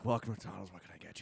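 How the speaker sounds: put-on miserable tone. Imitating a walk-up drive-through worker at mcdonald's: imitating a miserable worker. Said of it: "This guy fucking hated his life".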